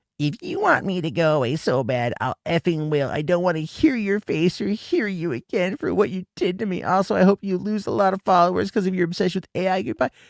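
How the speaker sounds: put-on very high blubbering, like a crying baby. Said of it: "He's crying like a baby".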